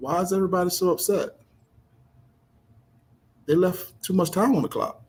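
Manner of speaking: acted cool, unbothered, calm tone, slightly high voice. Retelling a teammate's words after the other team scored: imitating Charlie Ward's calm voice. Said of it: "with this calm voice".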